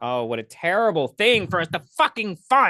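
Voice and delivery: furious, angry-sounding sarcasm with swooping pitch. Reading a list of grants to a fair housing center; sarcastic, sounding angry. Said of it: "That was sarcasm".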